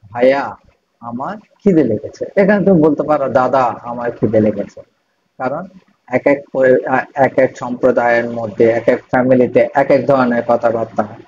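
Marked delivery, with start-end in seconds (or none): none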